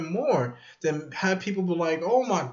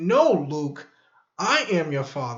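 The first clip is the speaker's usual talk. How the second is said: put-on aggressive villain voice, slower; 3 semitones lower than usual. Recalling a remembered movie line, imitating Darth Vader aggressively. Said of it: "with aggression, you know, with aggressive tone".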